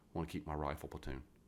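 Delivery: ordinary delivery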